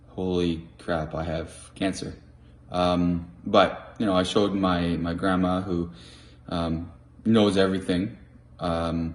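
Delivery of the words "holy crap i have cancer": usual speaking voice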